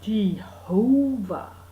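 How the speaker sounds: very slow "Jehovah" with stressed middle syllable. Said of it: "you kind of say it real slow and you emphasise the middle bit".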